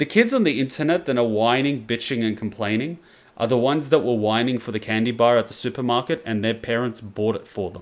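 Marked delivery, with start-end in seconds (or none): none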